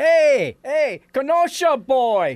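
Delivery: put-on bellowing voice. Retelling how the speaker's grandmother called out in a deli: retelling a bellow. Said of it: "my grandmother bellows out".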